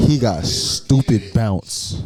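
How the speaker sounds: hard, emphatic delivery, every word stressed. Imitating how another speaker said a line: imitating an emphatic delivery. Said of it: "You said it real emphatically".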